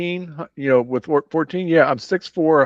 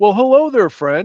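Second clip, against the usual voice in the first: showy, attention-grabbing, very loud and high; 6 semitones higher, 6 dB louder than usual. Standing in front of the steps, a character gives a very loud greeting. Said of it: "say very loud".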